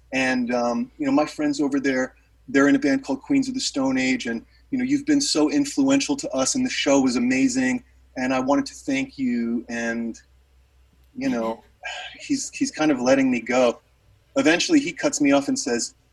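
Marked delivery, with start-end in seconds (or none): none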